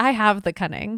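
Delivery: put-on grim, somber, heavy tone. Quoting a character admitting she has the cunning, said like it's a disease. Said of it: "I say it like it's a disease".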